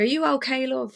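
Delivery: put-on Irish-English accent. Retelling what a stranger with a beer asked her: imitating an English-Irish accent. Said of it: "in this accent".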